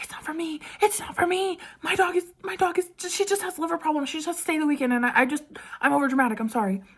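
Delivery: put-on whisper-shout. Retelling explaining to a lady while the quiet light was on: imitating her own whisper scream. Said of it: "whisper scream".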